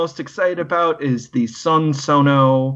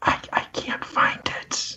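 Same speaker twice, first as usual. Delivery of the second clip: soft, hushed whisper under the breath. Answering a question about the Patreon numbers, whispering. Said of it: "You don't have to whisper that".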